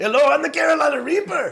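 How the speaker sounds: very high-pitched put-on Spanish accent. Asked by another speaker to say the line in a Spanish accent. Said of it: "you're going to say it in a Spanish".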